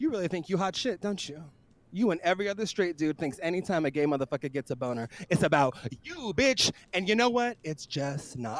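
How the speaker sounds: acted, jokey, half-serious teasing tone. Retelling what was said to a straight guy: retelling in a kidding tone. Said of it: "I said it in, like, a kidding tone".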